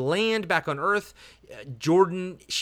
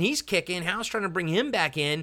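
ordinary delivery

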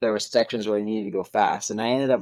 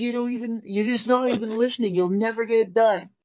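mock screaming, much higher pitch; 12 semitones higher, 5 dB louder than usual. Retelling an argument where they screamed at each other, retelling his screaming. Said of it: "So we're screaming at each other".

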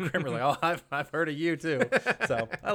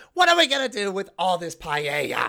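terrible put-on voice, pitch swooping all over; 4 semitones higher, 3 dB louder than usual. Quoting a favorite TV scene cutting to her: bad Estelle impression. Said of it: "that's a terrible, terrible version of her voice".

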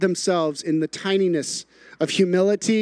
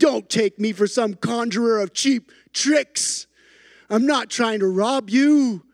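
acted-out big, resounding, booming, commanding wizard voice; 2 semitones higher than usual. Acting out the wizard's lines to Bilbo Baggins in a scene, booming wizard voice. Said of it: "his voice gets booming".

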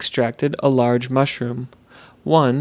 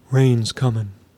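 unearthly, eerie, otherworldly mellow voice. Reading a story, voicing the odd mushroom being as it walks away, in an unearthly, mellow voice. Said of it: "spoke in an unearthly, mellow voice".

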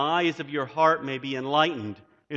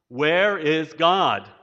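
harsher, more severe, sterner raised voice; 6 dB louder than usual. Narrating a story, a pastor repeats his question to a silent boy: even sterner. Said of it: "in an even sterner note".

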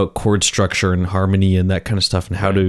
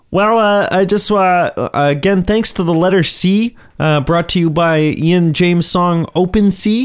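very high, squeaky puppet character voice; 10 semitones higher than usual. Asked to sign off the podcast, speaker does it in a Kermit the Frog voice. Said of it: "Why don't you sign off the podcast, Kermit?".

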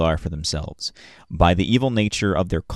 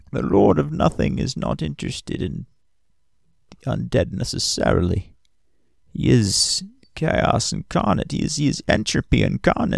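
put-on creaky, high, crazy old man voice; 7 semitones higher than usual. Voicing a character answering questions about an undead guy, old man voice. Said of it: "He says in his old man voice".

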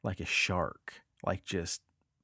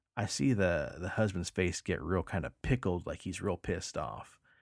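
plain

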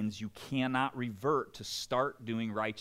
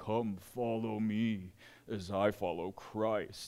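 slow, put-on, sad, gloomy, weighed-down voice. Showing how believers carry the gospel like a weight: mock sad, gloomy voice. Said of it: "so sad and gloomy".

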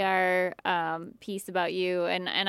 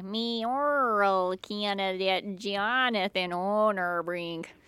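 put-on thick Minnesotan accent, slow and drawn-out. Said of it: "I was doing it in a really Minnesotan way".

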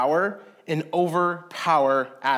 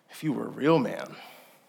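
quiet, lower voice; 5 semitones lower, 4 dB quieter than usual. Describing a woman answering a man who towers over her, retelling a quiet reply. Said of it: "and she responds quietly".

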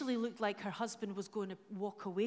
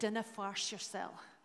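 convincing fake Scottish accent; 3 dB quieter than usual. Speaker voicing an angel's reply to a worried person, in a good Scottish accent. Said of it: "in a good Scottish accent".

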